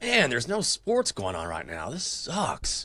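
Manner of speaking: put-on gloomy, glum, moping tone. Doing an impression of himself during covid with no sports: imitating himself gloomy. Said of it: "Here's my impression of me during covid".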